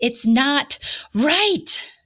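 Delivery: high, slow, drawn-out yell at full volume.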